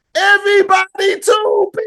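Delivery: sudden, very high-pitched shouted outburst. Retelling how a woman yells out a phrase at random, imitating Big V yelling. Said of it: "She just yells out randomly".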